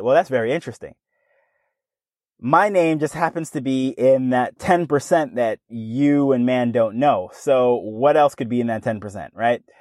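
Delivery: ordinary delivery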